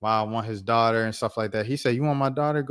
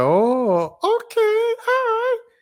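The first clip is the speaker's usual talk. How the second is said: put-on cartoon-style voice, higher and louder; 6 dB louder than usual. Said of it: "her voice was like a Disney voice".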